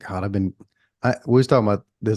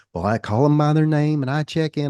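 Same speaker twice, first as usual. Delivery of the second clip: fake, higher-pitched put-on country accent; 7 semitones higher than usual. Acting out a reply in a conversation mid-story: put-on country accent. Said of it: "I don't know why I'm doing a country accent".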